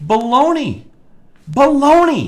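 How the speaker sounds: high, loud, angry worked-up outburst, belted out. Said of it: "I'm sorry I'm so worked up".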